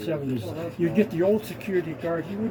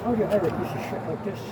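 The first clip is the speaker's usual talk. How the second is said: normal talking voice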